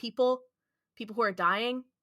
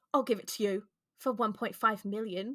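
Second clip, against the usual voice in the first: bad, horrible fake British accent. Retelling what a british woman said in a story, in a horrible british accent. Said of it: "That was a horrible British accent".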